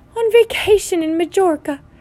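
curt, cutting, sharp, high-pitched snap. Aunt Petunia answers a question about the friend, snapping. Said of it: "snapped Aunt Petunia".

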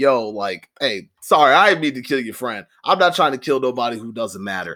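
ordinary delivery

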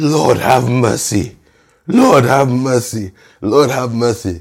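mock fervent, mild pleading cry, repeated. Retelling a praying man's prayer: imitating a man screaming. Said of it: "Then he started screaming".

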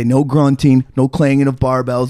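plain

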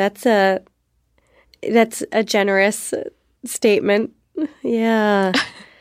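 ill at ease, uncomfortable, awkward tone. [name] responds to being called a caretaker, uncomfortable and awkward. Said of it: "You hear that discomfort in [name]'s voice?".

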